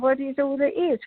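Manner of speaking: put-on innocent, childlike way of speaking. Retelling a childhood talk with an unseen voice: imitating own childlike way. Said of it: "I'm a baby".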